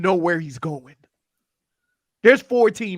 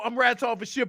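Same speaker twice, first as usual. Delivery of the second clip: usual speaking voice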